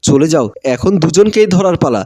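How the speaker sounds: plain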